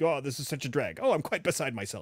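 cheesy, prissy, fussy put-on robot voice. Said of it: "cheesy-ass C three P O, like".

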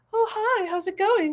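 very high, head-voicey register. Showing how you might greet a pet or baby, in head voice. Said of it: "That's sort of that head voicey place".

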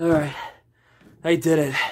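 winded and breathless. Just finishing a brutal back and bicep workout, out of breath. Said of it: "As you can tell by my breath".

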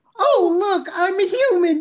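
super high put-on voice. Quoting what he says after taking down a whole army, in a super high Hooty voice. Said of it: "Why did I go super mega high when I tried to do Hootie".

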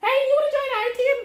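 very high, loud, grating little cartoon voice. Imagining SpongeBob walking up to Greninja, speak in an annoying little SpongeBob voice. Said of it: "in this annoying little voice".

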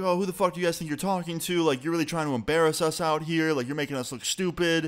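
fast, high-pitched, angry yelling. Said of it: "she's yelling at me".

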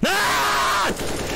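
excited shout.

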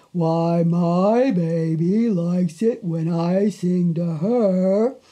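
slow, drawling, drawn-out cow voice. Reading a story aloud, give the cow a slow voice. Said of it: "the cow with her slow voice".

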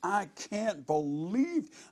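acted, full-force, high piercing scream. Retelling hearing the man in the next motel room, imitating Philip screaming. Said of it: "I hear Philip just screaming".

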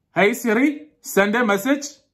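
put-on Pakistani accent, pitched very high. Speaker tests whether Siri understands accents, repeating the command; Pakistani accent. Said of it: "now we're gonna do a Pakistani accent".

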